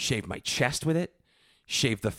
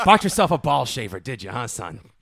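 mock patronizing, condescending fatherly tone; 5 dB louder than usual. Imitating the man who handed over the box, in a mock patronizing fatherly tone. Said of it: "the tone of his voice was like".

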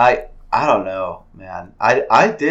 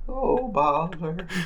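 put-on weird old man voice, pitched up; 8 semitones higher, 7 dB quieter than usual. Discussing a Pooh movie preview, doing Pooh's weird old man voice. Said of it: "his weird old man voice".

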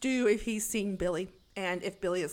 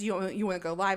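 ordinary delivery

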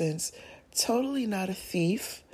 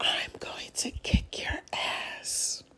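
hushed, slow, breathy whisper under the breath. Retelling a dream where a man leaned in close: imitating a whisper. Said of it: "and he whispered".

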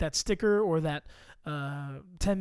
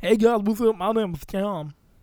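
loud, solid, put-on Texas accent; 3 semitones higher, 8 dB louder than usual. Doing a mock podcast intro for two hosts, solid Texas accent. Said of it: "That's a solid Texas accent".

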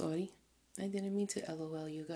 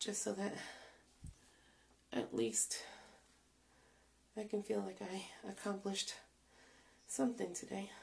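winded, breathless talking. Speaking to viewers about doing her hair; out of breath. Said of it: "I'm out of breath".

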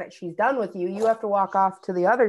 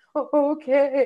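acted choked-up, tearful, high stammering voice; 6 semitones higher than usual. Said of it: "talking to the officer through my tears".

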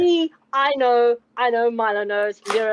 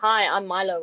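muffled speech around a stuffed mouth; 3 semitones lower than usual. Speaking in character while holding a spoon in the mouth: mouth full while talking. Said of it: "with my mouth full of spoon".

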